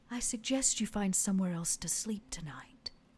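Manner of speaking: seductive tone. Voicing a courtesan who whispers a warning in an ear: seductive. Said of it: "Are you coming on to me?".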